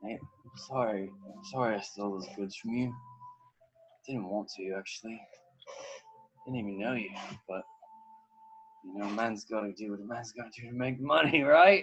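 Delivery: put-on drunk, tipsy and teary voice. Voicing a drunk character who tears up while apologizing: drunk and tearing up. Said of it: "he kinda tears up and he says".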